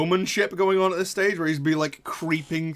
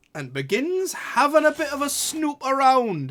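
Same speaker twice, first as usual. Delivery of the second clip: put-on Geordie accent with swooping pitch; 8 semitones higher than usual. Narrating a story, slipping into a Geordie accent. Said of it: "I went Geordie for that".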